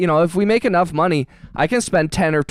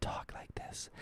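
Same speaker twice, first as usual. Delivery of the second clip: very quiet, breathy, barely audible whisper. Speaker shows how someone told them to talk for ASMR, really, really quiet. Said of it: "really, really quiet".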